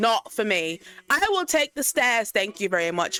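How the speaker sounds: scared, sing-song British accent. Reacting to a scary video, refusing with fear: british accent. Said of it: "Why did I turn British?".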